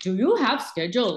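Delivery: Indian English accent. Showing the class how an accent changes a sentence: Indian accent. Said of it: "like Indian accent".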